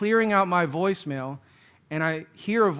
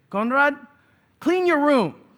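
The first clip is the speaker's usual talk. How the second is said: put-on thick Filipino accent, pitched up; 8 semitones higher, 3 dB louder than usual. Imitating what the speaker's mom would constantly say, in her thicker Filipino accent. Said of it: "in her kind of thicker Filipino accent".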